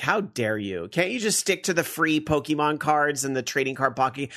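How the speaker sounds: ordinary delivery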